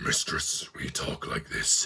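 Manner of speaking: hushed gruff whisper, deep, heavy breathing, monster voice. Describing a show's terrible monster voices, imitating the main one: deep gruff monster voice. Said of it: "really deep and gruff".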